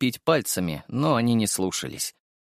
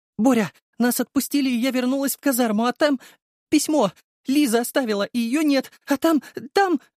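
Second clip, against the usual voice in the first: very high squeaky wail, on the verge of crying; 13 semitones higher than usual. A girl tells Borya about a letter Liza left behind: squeaky voice near tears. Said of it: "Писклявым голосом, готовым сорваться на слезы, причитала".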